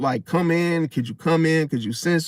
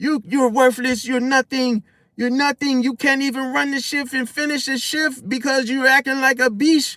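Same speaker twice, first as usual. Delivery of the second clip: high, mock berating, cussing tirade; 8 semitones higher than usual. Retelling how the boss fired a worker on the spot: imitating someone cussing out a worker. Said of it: "cussing him out and stuff".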